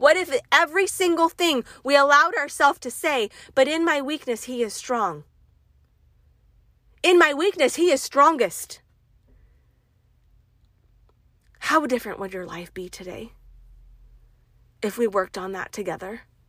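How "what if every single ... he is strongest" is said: passionate, loud, fervent, fired-up preacher-like delivery. Encouraging listeners before sharing a scripture, passionate and loud. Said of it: "I'm sorry for getting loud".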